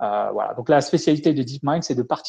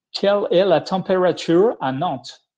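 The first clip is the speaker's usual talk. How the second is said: French through a clumsy English accent, pitched up; 6 semitones higher, 4 dB louder than usual. Asking a question in french, trying an accent: english accent in french. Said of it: "avec en français, mais euh, avec un accent anglais".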